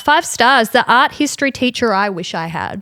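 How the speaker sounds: plain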